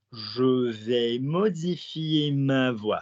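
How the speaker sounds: slow, unhurried. Modelling a french phrase for the other person to repeat: said slowly. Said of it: "So say to me slowly".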